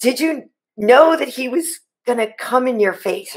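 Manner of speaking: usual speaking voice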